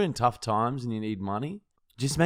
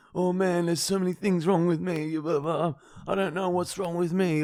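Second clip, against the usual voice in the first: high, falling-apart lament, breaking down; 6 semitones higher than usual. Telling a story, the speaker imitates the man they yelled at breaking down. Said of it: "it like sort of broke down".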